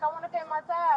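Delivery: normal talking voice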